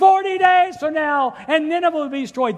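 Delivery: shrill, very loud, high-pitched shout at full volume. Retelling his message shouted while walking through the enemy city: imitating a shout. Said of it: "starts walking around shouting to these people".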